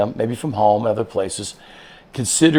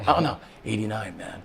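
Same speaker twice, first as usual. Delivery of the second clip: put-on whisper, quieter; 9 dB quieter than usual. Retelling how a player tells the coach a grade: imitating a player whispering. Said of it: "Why are you whispering that".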